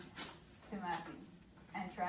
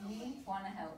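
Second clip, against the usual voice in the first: usual speaking voice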